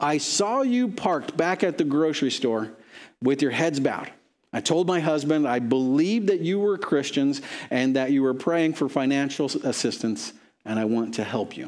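ordinary talk

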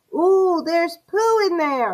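excited, high, shrieking screamed outburst. A boy swings open the pet's cage door and calls out, screaming. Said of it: "he screamed".

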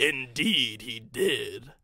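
said through a chuckle. Narrator reads an unseen voice answering the murmuring engines, chuckling. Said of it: "chuckled a voice".

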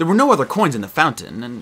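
plain reading voice

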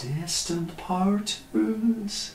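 voice cracking. Speaking about the cosmos to listeners, voice cracking. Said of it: "you can hear the crack in my voice".

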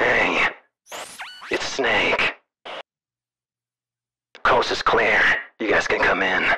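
radio voice, like over a walkie-talkie handset. Narrating a man who radios in to his buddies, speaking in a radio voice. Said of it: "You still have your radio voice on".

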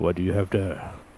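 deep, dropped voice, as from inside an armored helmet. Retelling how a helmeted figure spoke as he approached, in deep voice. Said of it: "And in his deep voice".

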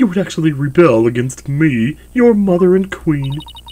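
indignant, haughty tone.

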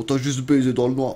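over-the-top, exaggerated big-voiced delivery. Imitating a person's big deep voice saying a phrase: exaggerated deep voice. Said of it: "Avec sa grosse voix comme ça".

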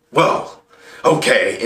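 sullen, sulking voice. Giving advice on being turned down, acting out a guy who pouts, imitating a pouting guy. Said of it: "And pout".

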